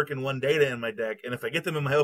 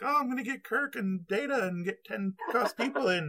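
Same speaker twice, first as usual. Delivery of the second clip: eager, excited, high-pitched put-on voice; 9 semitones higher, 4 dB quieter than usual. Retelling what everybody said about a card, imitating playtesters in a put-on voice. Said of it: "I don't know why I'm using that voice".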